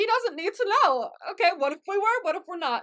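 mock defiant tone, loud and high-pitched.

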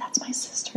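whispered. Retelling a friend's words, imitating how he whispered it. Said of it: "And he like whispered it".

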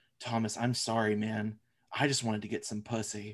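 mock sincere, low, earnest, heartfelt tone. Quoting the wildest line of a movie; imitating Costa's mock conviction. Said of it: "with so much conviction in his voice".

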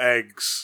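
loud, flat, deadpan one-note monotone eggs. Recording a word to dub over another, flat monotone 'eggs'. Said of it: "me saying the word eggs in a monotone voice".

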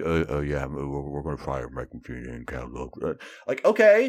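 mumbled, mumbling delivery. Mocking how groundbreaking news was announced: mumbled announcement. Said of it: "It's almost like they mumbled it".

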